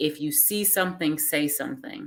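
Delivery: ordinary delivery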